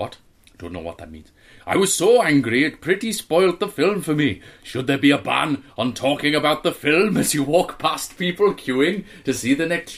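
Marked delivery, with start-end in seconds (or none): 1.7-9.9 fake Welsh accent, higher and louder. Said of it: "Welsh accent, please".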